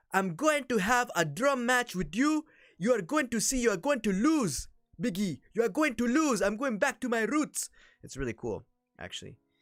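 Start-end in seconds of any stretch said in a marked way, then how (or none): 0.1-7.7 put-on loud, high-pitched, shouted Nigerian accent. Retelling Apollo Crews talking to Biggie, Apollo Crews' Nigerian accent. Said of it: "he is talking like this".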